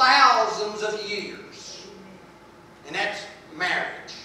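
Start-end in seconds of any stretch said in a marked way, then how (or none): 0.0-1.9 thousands stretched slow and louder. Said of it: "I want to say it again".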